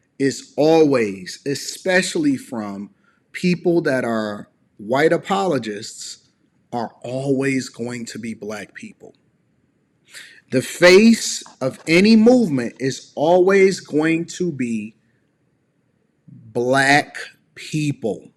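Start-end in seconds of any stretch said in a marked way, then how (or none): 10.5-18.2 very slow, loud, every word clearly spelled out. Speaker repeating a point slowly so listeners will get it, very slow. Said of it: "I'm going to say that so slow".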